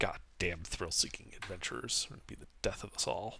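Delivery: mumbling under the breath. Voicing a character as the party walks away: mumbling under his breath. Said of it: "you hear a mumble under his breath".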